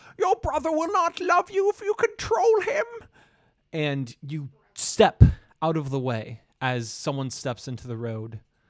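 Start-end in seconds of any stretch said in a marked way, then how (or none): 0.2-2.9 very high, muffled yell. Game narrator voices a woman shouting from a fortune teller's tent, muffled shouting. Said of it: "Muffled, she says".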